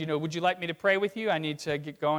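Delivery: normal talking voice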